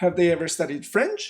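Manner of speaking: question-like intonation climbing on "French". Teaching yes-no question intonation: rise at the end on French. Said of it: "for yes no questions, the intonation goes up".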